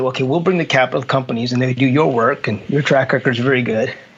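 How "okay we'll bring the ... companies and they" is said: usual speaking voice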